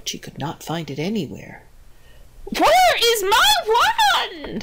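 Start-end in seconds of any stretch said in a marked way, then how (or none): 2.6-4.6 very high, slow, drawn-out wailing cry. Narrator reads the old witch, who can't find her wand, crying out. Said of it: "the old witch cried".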